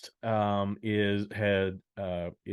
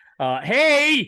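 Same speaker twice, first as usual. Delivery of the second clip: high, loud, weird carnival barker voice. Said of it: "I got some weird Carnival Barker voice there".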